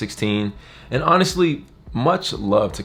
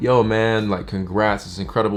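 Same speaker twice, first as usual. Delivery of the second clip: ordinary talk, nothing marked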